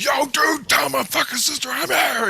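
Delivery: acted-out, very high, loud, drawn-out shrieking shout. Retelling how a man demanded to see his sister: imitating someone screaming. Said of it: "he's screaming right in my face".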